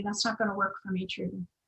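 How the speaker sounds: hushed, very quiet, soft-spoken delivery. Retelling the husband's reply to twenty-four nights away: speaking very quietly. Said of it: "he very quietly said to me".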